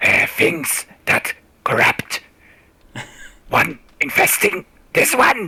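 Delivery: stumbling, halting reptilian lizard creature voice. A lizard creature who struggles with common words speaks in a lizard creature voice. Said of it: "putting them through his lizard voice box".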